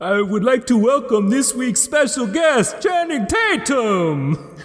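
drawn-out vampire voice. Doing a new impression for another speaker: Special Occasion Dracula impression. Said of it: "so Dracula is not the special guest".

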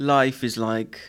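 put-on British-sounding accent. Quoting a movie line, attempt sounded British: sounded British. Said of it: "that sounded British".

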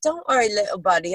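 bad, fake Australian accent, done poorly. Quoting a meme of Steve Irwin talking to a ray, bad Steve Irwin impression. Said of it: "I can't do Australian".

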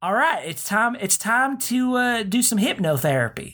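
put-on Southern rural accent, pitched very high. Trying out an accent for Sigmund Freud: Freud accent. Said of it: "What's a good Freud accent?".

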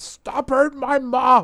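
very loud, very high, shrill, drawn-out yell. Retelling a comic scene where a boy yells at an attacker: imitating a yell. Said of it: "yells at him".

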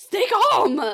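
very loud, shrill, high-pitched yelling. Imitating Jasper telling the listeners to stay calm: imitating Jasper yelling. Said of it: "this man is yelling at you".

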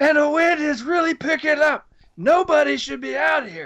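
acted, high, screaming field reporter voice. Telling a story about a news reporter out in the wind, imitating him screaming. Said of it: "he's screaming at the microphone".

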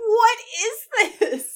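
high, slow, disbelieving and baffled laugh.

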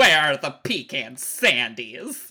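campy, nasal, broad comedian voice. Demonstrate how a reanimated saber-toothed tiger sounds, in a Paul Lynde voice. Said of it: "with the voice of Paul Lynn".

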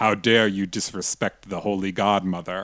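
dark, foreboding, ominous, menacing voice. Describing a game where a voice speaks after you shoot the godmother, in an ominous voice. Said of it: "like an ominous voice go like".

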